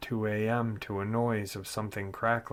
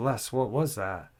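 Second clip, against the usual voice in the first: put-on alarmed, panicky delivery. Retelling a little sister's question after a noise: imitating a panicked voice. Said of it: "in a panicked voice".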